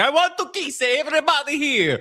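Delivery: very high, wild outburst. Doing an impression of an Oscar winner overjoyed at America: Roberto Benigni impression. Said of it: "That was my Ber-, Ber-, Benito Bellini br-, br-, impression".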